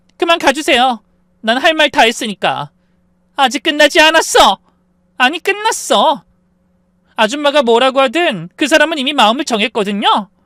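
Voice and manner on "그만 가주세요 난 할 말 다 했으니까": acted shout, higher and louder. Retelling the other woman at the front door: acting a shout. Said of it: "소리쳤어요".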